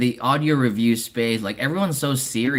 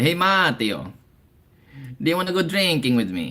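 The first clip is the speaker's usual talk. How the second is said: put-on Italian accent in English; 3 semitones higher than usual. Retelling jokes with a coworker from Italy: imitating Matteo's Italian accent. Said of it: "copy his accent".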